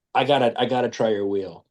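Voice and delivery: ordinary talk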